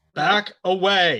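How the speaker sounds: loud yelling. In character, warning the group away from a coiled creature: yelling to the group. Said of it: "I am going to yell to the group".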